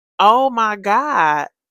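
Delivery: loud holler. Retelling pausing the video to react, imitating own hollering. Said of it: "because I was hollering".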